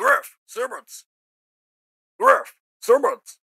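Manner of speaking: very high voice, sounding like it's over a phone line. Demonstrating a high-pass voice setting, sounding like on a cell phone. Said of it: "Makes you sound like you're on a cell phone".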